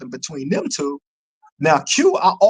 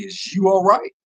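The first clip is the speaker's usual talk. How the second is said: play-acted playful clowning, joking tease; 3 semitones higher than usual. Retelling teasing a fellow inmate at the cell: retelling a smirking tease. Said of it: "a smirk on my face".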